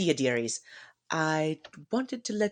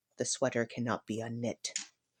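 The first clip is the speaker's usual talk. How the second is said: hushed, very soft and very low voice; 8 semitones lower, 9 dB quieter than usual. Game master voicing a character who gently comforts a player, in a very quiet voice. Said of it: "says in a very quiet voice".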